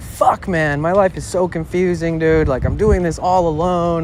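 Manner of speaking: tearful, sobbing voice, crying through the words. Speaker recounting walking outside alone, retelling own sobbing. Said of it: "I'm like sobbing".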